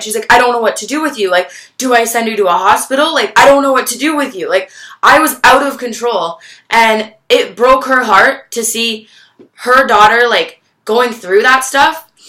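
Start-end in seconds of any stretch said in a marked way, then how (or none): 0.3-4.5 put-on tearful, hysterical pleading, higher. Retelling her mom's words in the doorway: imitating crying hysterically. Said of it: "she was crying hysterically in the doorway".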